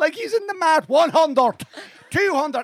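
put-on County Cavan accent. Telling the boys what a man said, repeating it in the Cavan accent. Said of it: "In the Cavan accent".

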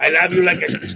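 put-on loud, halting Spanish-accented English. [name] retells what Chico said to him; imitating Chico's Spanish accent. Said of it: "I'm doing a Spanish accent here".

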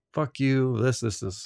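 angry, high-pitched, drawn-out shouted yell. Retelling how a guy at a bar answered an offered drink: imitating someone yelling. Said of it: "And he yelled".

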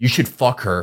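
mock very aggressive, pushy, pressing tone. Retelling what a man at a bar told the speaker: imitating an aggressive man. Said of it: "very aggressively".

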